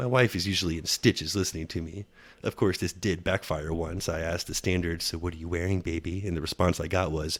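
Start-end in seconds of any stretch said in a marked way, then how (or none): 5.0-6.3 put-on creepy, sleazy, perverted voice. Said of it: "the most perverted voice I can muster".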